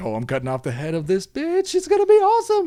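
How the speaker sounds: play-acted wild, very high-pitched, shrill, swooping, rising scream. Retelling a scene where a character prepares a beheading: imitating Dracny screaming. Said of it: "Dracny's screaming".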